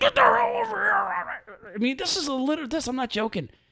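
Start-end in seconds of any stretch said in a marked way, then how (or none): 0.0-0.9 very high, furious screaming. Retelling how a motorcycle cop ordered him over: imitating a cop screaming. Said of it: "when he screams at me".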